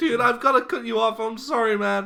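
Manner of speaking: put-on high, loud semi-American accent. Showing a doubtful listener how he talks in a video you rewatched, semi-American Andrew Garfield impression. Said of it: "Why did you do a semi-American accent".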